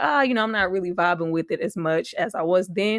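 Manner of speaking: normal talking voice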